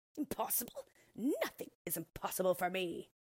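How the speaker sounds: bold, exclaiming tone. The orc, answering someone who doubts she can become a mouse: exclaiming. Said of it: "exclaimed the orc".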